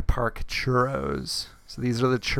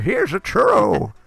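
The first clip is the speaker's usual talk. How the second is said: put-on old prospector voice, much higher; 9 semitones higher, 7 dB louder than usual. Imagining a churro vendor near Big Thunder Mountain, in an old prospector voice. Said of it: "Some like old prospector".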